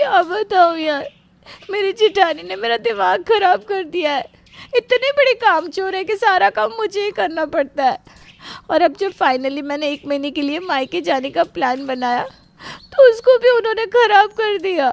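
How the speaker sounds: tearful sobbing speech. A woman on the phone to her friend, complaining about her sister-in-law, crying while talking. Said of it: "सबसे पहले तो रोना बंद कर".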